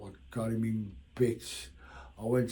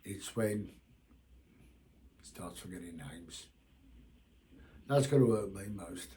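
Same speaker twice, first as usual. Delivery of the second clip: choked up, close to tears; 3 semitones lower, 3 dB quieter than usual. Talking about a friend forgetting names, emotional and close to tears. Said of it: "I've just got a bit emotional here".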